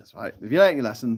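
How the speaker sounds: normal talking voice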